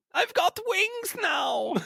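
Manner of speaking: put-on very high campy German accent. Speakers rate a character's voice acting, campy German Heimlich voice. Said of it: "The camp German".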